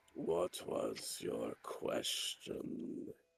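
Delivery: rasping ghoulish voice. Voicing a character who answers a player: rasping ghoulish voice. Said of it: "he says in his rasping, ghoulish voice".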